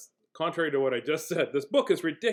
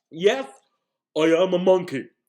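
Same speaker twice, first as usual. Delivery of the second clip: loud, goofy, silly pretend monkey voice; 2 semitones higher, 6 dB louder than usual. Reading a book aloud to listeners, in a monkey voice. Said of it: "You'll have to read it in my monkey voice".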